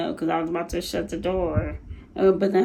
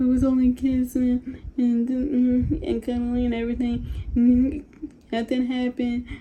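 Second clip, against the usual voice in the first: mock crying, higher pitch; 6 semitones higher than usual. Retelling an argument, acting out past self crying. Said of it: "I'm like crying at this point".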